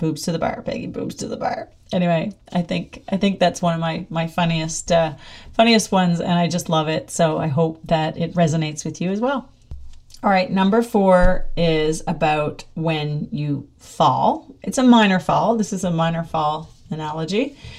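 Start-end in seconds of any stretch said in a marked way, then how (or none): 0.0-1.7 muttering to oneself. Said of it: "I say, Oh, myself, okay".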